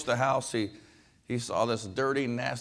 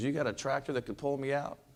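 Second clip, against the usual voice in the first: ordinary delivery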